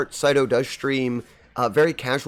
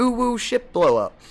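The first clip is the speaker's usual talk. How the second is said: put-on high, cutesy, cooing baby-voice ooh. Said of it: "your hilarious ooh, ooh voice".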